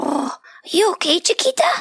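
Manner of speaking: very high, squeaky little squeak. The narrator has just hit their head on a desk; an unseen voice speaks, squeaky. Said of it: "A squeaky voice echoed in my head".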